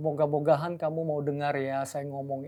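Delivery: low, flat, hesitant, fumbling and unsure.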